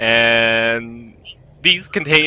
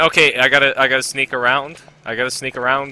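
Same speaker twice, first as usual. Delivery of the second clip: ordinary talk, nothing marked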